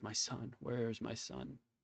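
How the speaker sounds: voice of a dying man. Voicing a dying creature on the ground asking for his son: dying man's voice. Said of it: "he looks up and he says".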